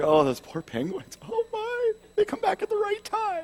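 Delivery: tearful, very high, swooping, hushed voice. Describing watching March of the Penguins, the speaker acts out tearing up. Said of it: "you're just tearing up with these penguins".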